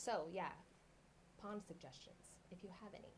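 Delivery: soft, quiet delivery. Asking the other speaker for pond suggestions, getting quiet. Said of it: "you're getting quiet again".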